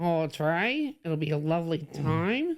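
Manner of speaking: put-on Australian accent. Replying to the other speaker while both use total Aussie accents. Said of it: "speaking uh, with, with total Aussie accents".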